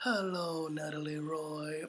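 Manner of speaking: cartoon teddy bear character voice. Greeting a viewer who asked to hear it in Pooh Bear voice. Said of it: "say hello to her in Pooh Bear's voice".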